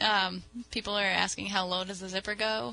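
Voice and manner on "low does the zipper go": ordinary talk, nothing marked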